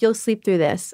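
plain

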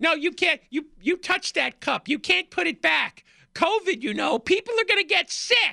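very high-pitched, really squeaky voice. Retelling how an employee scolded someone for putting a cup back: squeaky voice. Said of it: "got a real squeaky voice".

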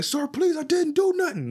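play-acted very high begging and pleading. Retelling a scene where a girl records a man, imitating him begging and pleading. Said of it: "The dude is like begging and pleading".

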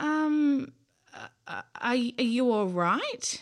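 hesitant, shaky, rising voice. Narrator reads a man speaking to a howling creature: shaky question. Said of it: "he asked shakily".

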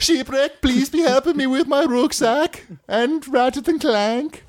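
fake Swedish accent, very high pitch. Speaker asking someone for help, in a put-on Swedish accent. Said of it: "doing that voice".

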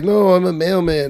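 high, offhand, put-on Puerto Rican accent. Retelling Henry's reply about his job, as Henry in Puerto Rican accent. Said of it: "I can't do a Puerto Rican accent".

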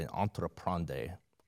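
Spanish-tinged pronunciation. Pronouncing the French root word of entrepreneurship: French word said with Spanish-sounding accent. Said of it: "Spanish accent there".

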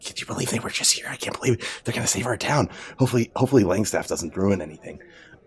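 hushed whisper. Game master voices townsfolk gathered as the players leave; whispering villagers.

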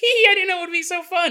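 very high, fast, giggly, tickled voice.

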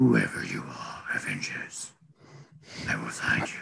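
growly villain voice. Imagining a casting pick voicing the villain: growly Liam Neeson voice. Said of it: "Give him, like, a growly type voice".

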